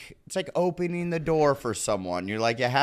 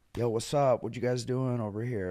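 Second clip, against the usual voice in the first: suave, cool, smooth guy voice; 5 dB quieter than usual. Imitating guy friends who are good at flirting: impression of a cool guy. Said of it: "it was a great impression".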